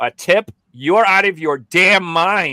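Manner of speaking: loud, mock slow, deliberate, pointed tone. Telling how he reacts when a tip screen pops up: retelling saying it very loudly. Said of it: "I say it very loudly".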